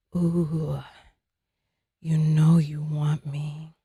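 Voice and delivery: seductive, soft, slow sensual voice. Speaker moves the mic close so listeners can hear it; soft and sensual. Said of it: "so soft and sensual".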